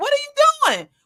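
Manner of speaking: high-pitched, exasperated outburst. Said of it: "I'm like".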